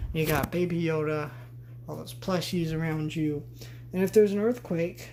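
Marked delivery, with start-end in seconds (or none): 3.9-5.1 sarcastic, dripping, slightly raised pitch. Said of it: "I'm being sarcastic".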